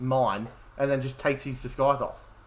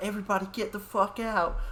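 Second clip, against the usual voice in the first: mock frantic, high, panicked scream; 8 semitones higher, 4 dB quieter than usual. Discussing the original horror film, the speaker imitates a character's line with Axel's scream. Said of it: "way he's like screams".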